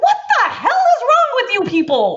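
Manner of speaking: slow, swooping, very loud, very high, shrill, drawn-out yell. Arguing that parents should remove harmful habits, yelling. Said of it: "Sorry, I don't mean to yell".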